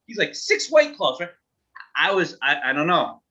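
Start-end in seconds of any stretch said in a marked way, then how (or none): 0.3-1.3 put-on excitement, pitched much higher. Retelling a guy walking up to the bar ordering drinks, imitating an excited guy. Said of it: "he was so excited".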